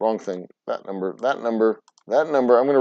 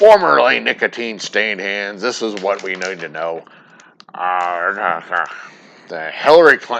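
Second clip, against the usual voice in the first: very slow, loud, drawn-out radio-host drawl, stretched "uh"; 2 semitones lower, 5 dB louder than usual. Doing an impersonation while streaming: Rush Limbaugh impersonation. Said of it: "that's my Rush Limbaugh impersonation".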